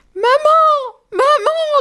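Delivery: very high, tearful crying call. The poor rabbits, threatened by the wolf, call for their mother, crying out. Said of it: "Crient les pauvres lapins".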